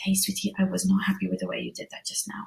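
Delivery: very quiet, low, private-sounding voice. Showing a parent how to talk privately to her daughter: low private voice. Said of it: "in a low voice".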